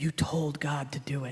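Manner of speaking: hushed, secretive whisper, close and intimate. Retelling what a drafted man's mother said while hugging the speaker, retelling a whisper. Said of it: "she whispers".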